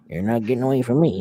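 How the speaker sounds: 1930s robber-style put-on voice. Liking his impression more, the speaker keeps it going: Stu Hart impression, 1930s robber. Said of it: "sounds like a nineteen thirties robber".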